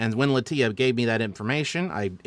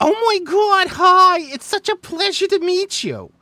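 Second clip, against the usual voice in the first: very high, loud, excited Brooklyn accent; 10 dB louder than usual. Speaker showing a voice used for a character meeting people, Meg Frock's excited Brooklyn voice. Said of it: "sort of like a Brooklyn esque uh, accent, but like very excited".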